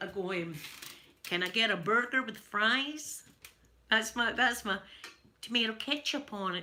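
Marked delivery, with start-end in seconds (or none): 1.2-6.6 clumsy, bad put-on American accent. Speaker tries out an attempted American accent for listeners. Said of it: "I try and do an American accent".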